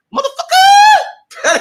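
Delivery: very high, loud, belted-out shout. Recalling how Panic used to say a word: imitating Panic's catchphrase. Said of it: "Panic used to say it like that".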